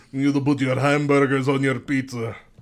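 clumsy, bad, put-on Russian accent. Two speakers trading silly accents: bad Russian accent. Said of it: "Definitely Russian".

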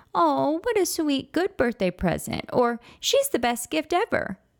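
very high, loving, affectionate little-dog voice. The speaker shows how the family talks about their dog, in an affectionate little doggy voice. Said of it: "in our best little doggy voice".

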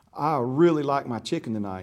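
put-on small-town country child's way of talking. Retelling what a three-year-old said about his chicken: imitating Oliver's country little-fella talk. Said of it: "you know how country little fella talks".

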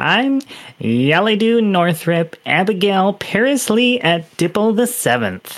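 winded, breathless, high gnome voice after hard laughing. Voicing a gnome introducing himself: gnome short of breath from laughing. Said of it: "a little short of breath from laughing".

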